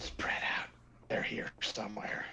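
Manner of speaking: low, breathy, guttural whispered voice. Something unseen is heard speaking in Aquan: guttural, low voice. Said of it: "almost like a guttural, low voice speaking".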